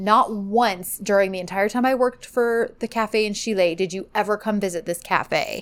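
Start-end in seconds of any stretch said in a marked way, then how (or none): none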